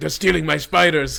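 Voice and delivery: very loud, raspy, rough villain yell. Retelling a movie villain's line, imitating the villain yelling. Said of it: "He yells that".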